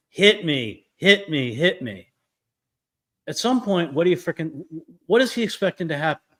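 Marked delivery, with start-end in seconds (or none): 0.2-2.1 drawn-out, very slow, furious yelling. Describing a husband cornering his wife against a wall, retelling a scream.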